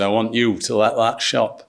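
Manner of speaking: attempted Yorkshire accent. Retelling a line Simon said, Simon in a Yorkshire accent. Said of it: "that was an attempt at a Yorkshire accent".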